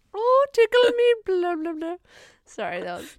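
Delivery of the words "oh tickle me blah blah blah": very shrill, very loud put-on Irish accent. Improvising an Irishman going up into space as an astronaut: Irish accent. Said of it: "You don't do Irish".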